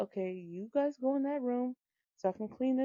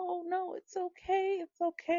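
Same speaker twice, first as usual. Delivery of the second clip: acted soothing, pitched-up, reassuring voice; 8 semitones higher than usual. Mom retells calming her kids about to cry, retelling reassuring words. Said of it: "trying to reassure them".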